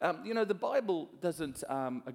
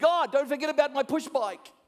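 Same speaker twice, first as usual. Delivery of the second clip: put-on very high, very loud, shrill little-boy shout; 11 semitones higher, 9 dB louder than usual. Telling a joke, a little boy prays and raises his voice, imitating a boy shouting. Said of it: "the little boy raises his voice really loud".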